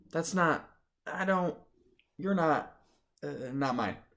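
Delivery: faltering, small, high little voice. Narrator, handed a sweater by the teacher, finally speaks in a little voice. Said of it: "I finally say in a little voice".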